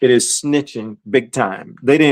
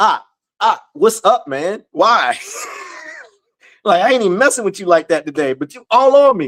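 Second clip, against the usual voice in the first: loose, casual, easygoing banter, raised pitch; 7 semitones higher than usual. Imagining how Frankie would answer being teased: imitating Frankie. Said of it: "I bet you he like".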